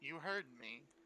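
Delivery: quiet, calm, understated delivery. Retelling what another person said in reply, quietly. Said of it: "Vishal just kind of like quietly says".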